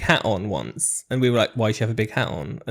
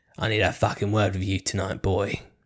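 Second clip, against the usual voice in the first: put-on British accent in a police-officer style; 3 semitones lower than usual. Recounting what Jane basically said to them, imitating Jane's British accent. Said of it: "British accent".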